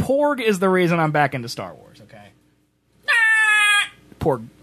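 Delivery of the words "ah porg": very high creature cry, ah stretched and drawn out. Talking about Star Wars, the speaker does a Porg impression. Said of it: "It's my Porg impression right there".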